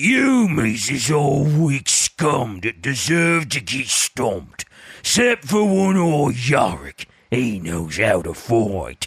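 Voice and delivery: swooping, laid-on, put-on orc voice. Reading a quote aloud at another speaker's request, in an orc voice. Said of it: "you want to read that quote with your patented orc voice".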